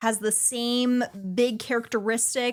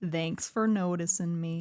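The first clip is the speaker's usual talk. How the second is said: gloomy put-on voice, lower; 5 semitones lower, 4 dB quieter than usual. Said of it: "provide the gloomy voice for Eeyore".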